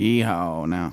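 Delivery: flat, unenthusiastic "yeehaw". Asked how he would yeehaw, giving an unenthusiastic flat yeehaw. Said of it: "my complete lack of enthusiasm".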